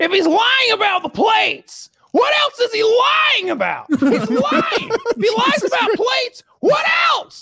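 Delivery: very high, abrasive, parrot-like squawking voice. Retelling what a bodybuilder said about fake plates: Greg Doucette impression. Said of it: "Greg has the most annoying voice. He sounds like the parrot from Aladdin".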